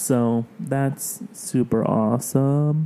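sarcastic, slow, drawn-out delivery. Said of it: "that was sarcasm".

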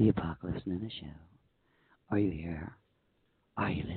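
seductive, very low phone-sex voice. A host re-saying the show's name to listeners: phone sex voice. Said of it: "I could have done like the phone sex voice".

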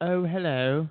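put-on southern English accent on hello. Asked to show a thick southern accent, doing a southern English accent. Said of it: "I didn't mean the south of the UK".

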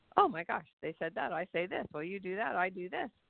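normal talking voice

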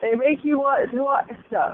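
talking through a yawn. Talking to viewers about a TV show: yawning. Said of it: "that was a yawning voice there".

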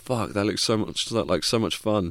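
ordinary delivery

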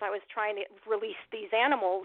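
plain

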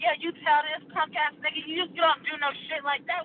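put-on enraged screaming, high-pitched and furious. Recounting cussing out a man over a video, retelling a scream. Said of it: "I'm sitting there screaming like".

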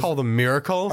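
ordinary delivery

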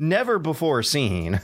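sarcastic mock enthusiasm. Mocking a game preview's praise of a familiar setting: sarcastic. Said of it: "That's all sarcasm".

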